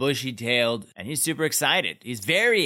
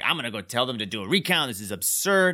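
usual speaking voice

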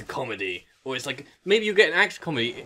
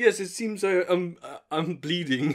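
put-on German-accented voice; 3 semitones higher than usual. Retelling Werner Herzog being shot during an interview: Werner Herzog impression. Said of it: "he's just like".

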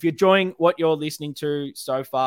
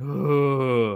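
odd-voiced groan of many voices. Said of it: "an even bigger groan of".

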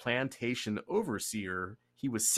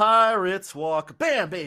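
bad put-on Jamaican accent, very high and loud; 9 semitones higher, 10 dB louder than usual. While talking about musicians back then and their many kids, put on a bad jamaican accent. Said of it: "My Jamaican accent is not the best".

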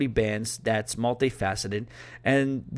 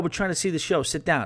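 mock light heckling call-out; 5 semitones higher than usual. Telling about a show, the speaker acts out seated people yelling at the dancers. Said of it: "they were yelling at the people on the dance area".

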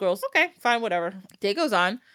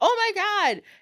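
put-on very high, shrill little-kid scream; 12 semitones higher than usual. Telling how a little girl knocked her brother's head off, the speaker retells her scream. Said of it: "She screams".

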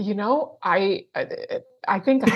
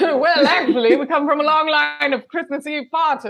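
loud, higher, over-the-top fake posh English accent. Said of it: "apologizing for the brutal accent that I just got".

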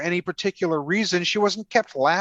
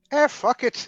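put-on Irish brogue, pitched up; 6 semitones higher than usual. Imitating an actress agreeing to a role for money: Irish accent. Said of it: "That's my Irish, that's my Irish accent".

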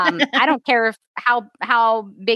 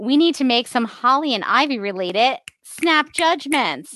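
normal talking voice

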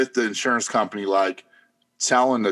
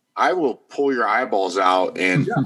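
normal talking voice

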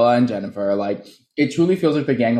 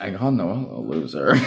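imitated muttered whisper, much slower; 4 semitones lower, 3 dB quieter than usual. Recapping a confrontation, acting out her whispering under her breath. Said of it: "she's just whispering it under her breath".

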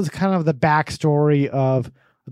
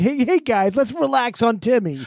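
put-on earnest goody-goody kid voice, pitched up; 8 semitones higher than usual. Mocking a friend's reaction to nose jokes: imitating an after-school special kid. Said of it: "he's like the kid in, like, an after-school special".

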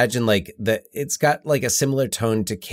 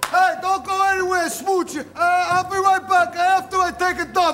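mock, shrill, very high shouted call. Recalling a show scene, quoting Spinner's shouted line. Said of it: "when he shouts".

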